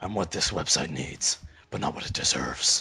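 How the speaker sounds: whispered, very breathy character voice. Repeating a line on request in a Kevin Conroy voice. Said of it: "Do that again".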